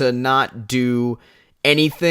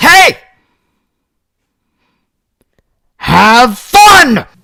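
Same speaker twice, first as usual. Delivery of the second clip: put-on very loud, aggressive, pitched-up bark; 9 semitones higher, 13 dB louder than usual. Imitating a dad dropping a kid at soccer practice: imitating an aggressive "have fun". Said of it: "in such an aggressive voice like that".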